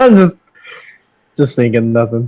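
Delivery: words broken up by laughing throughout. Answering another speaker who asks why they are laughing: laughing while talking. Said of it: "you're laughing".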